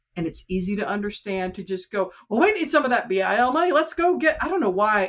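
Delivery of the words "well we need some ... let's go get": high, half-done cartoon rooster voice. Speaker voices tempted local leaders in a pseudo Foghorn Leghorn voice. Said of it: "I always adopt that sort of pseudo foghorn leghorn voice".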